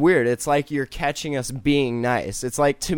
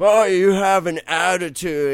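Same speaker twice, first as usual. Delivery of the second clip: put-on drunk man's voice, much higher pitch; 3 semitones higher, 4 dB louder than usual. Retelling a bum's reply to a man yelling at him, imitating a drunk man. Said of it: "he's all drunk".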